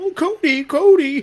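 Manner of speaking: squeaked out loud in a mocking tone. Describing a promo, imitating the wrestler mocking the crowd: The Rock's silly mocking voice. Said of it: "his silly little voice that he does when he makes fun of the crowd".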